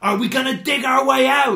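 exasperated, impatient, shrill, very high and loud. Narrator voicing Harry the Badger questioning Stuart the Badger's idea: impatient. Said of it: "asked Harry the Badger impatiently".

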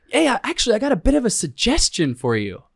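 very high, breezy, chipper, bouncy, all-cheery voice. Recounting a Special Forces guy walking up with a suggestion: imitating a chipper tone. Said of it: "walks up to you all chipper".

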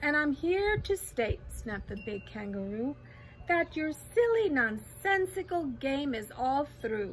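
plain reading voice

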